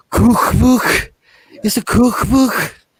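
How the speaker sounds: put-on high, slow Mancunian accent. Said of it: "it's like them saying".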